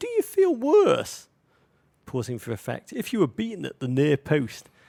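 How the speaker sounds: put-on very high, loud, drawn-out childlike little boy voice. Speaker retells asking them a question, in their little boy voice. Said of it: "in my little boy voice".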